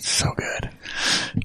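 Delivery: hushed, soft, breathy whisper, half under the breath. Agreeing with the others while talking about food, whispering. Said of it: "I don't know why I whispered that".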